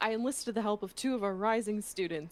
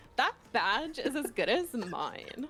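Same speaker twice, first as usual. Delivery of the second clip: put-on Jersey girl voice, New Jersey accent; 3 semitones higher than usual. Reading a game character's line when asked: jersey girl voice. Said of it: "do your Jersey girl voice for her".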